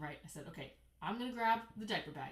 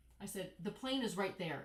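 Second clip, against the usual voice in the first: ordinary talk, nothing marked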